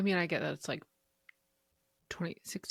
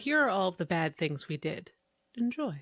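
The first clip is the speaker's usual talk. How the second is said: usual speaking voice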